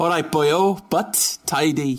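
put-on Welsh accent, fully committed. Talking about Cardiff, finally giving in to the accent, put-on Welsh accent. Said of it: "I managed to stay away from the accent ... I can't do it anymore".

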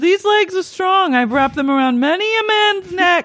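very high, shouted yell. Retelling what a woman shouted into the night: imitating someone shouting. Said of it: "Just shouting into the night".

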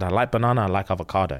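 put-on deadpan delivery. Retelling someone's reply when questioned about his recipe, retelling a deadpan answer. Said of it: "he looked deadpan".

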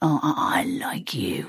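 growled, snarling delivery. Showing how they deliver the line, snarling. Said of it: "I snarl it".

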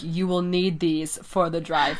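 put-on sinister, menacing voice. Recounting a story and quoting what Schultz said, in a sinister Schultz voice. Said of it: "like really sinisterly".

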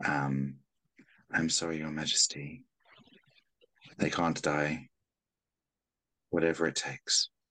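dazed, absent, slow, distant mutter. Narrator voices a woman staring down at people below, muttering under her breath. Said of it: "she's just muttering under her breath".

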